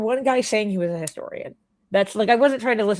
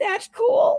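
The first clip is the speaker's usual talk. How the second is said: very high squeak, voice nearly gone, croaky. Retelling trying to chat with no voice: imitating own voiceless croak. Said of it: "Except I have no voice".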